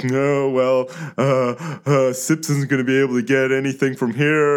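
smirking, put-on voice. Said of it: "he'd be like".

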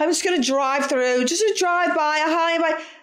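fake casual delivery.

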